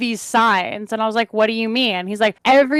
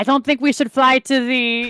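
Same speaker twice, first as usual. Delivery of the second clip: put-on French accent; 2 semitones higher than usual. Telling about working with European teammates, imitating a French accent. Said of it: "I'm French now".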